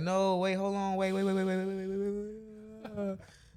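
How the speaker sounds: play-acted high sobbing, pleading scream, drawn-out "wait". Retelling being told they weren't ready and falling back: imitating crying screams. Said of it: "crying, screaming like".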